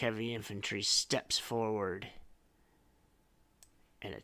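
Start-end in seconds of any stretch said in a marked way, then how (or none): none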